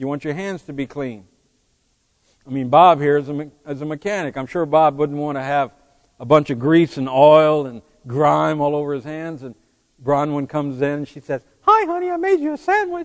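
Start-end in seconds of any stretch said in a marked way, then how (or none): 11.6-13.1 very high-pitched voice. Acting out a wife offering her husband a sandwich: imitating Bronwyn. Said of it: "You notice how well I imitated Bronwyn".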